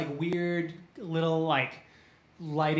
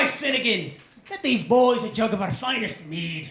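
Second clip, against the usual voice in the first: half-orc voice, hollering and calling out; 5 semitones higher, 6 dB louder than usual. Voicing a half orc calling over to the bar: half orc calling across the bar. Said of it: "he calls over to the bar".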